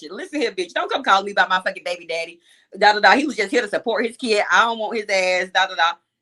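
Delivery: normal talking voice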